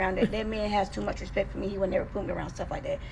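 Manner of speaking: ordinary talk, nothing marked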